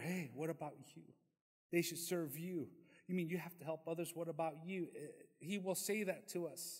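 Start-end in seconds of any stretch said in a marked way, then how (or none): 0.0-4.9 fast, sly, coaxing, tempting hushed half-whisper. Speaker warns listeners about temptation: imitating Satan's half-whisper. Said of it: "Satan whispers in your ear".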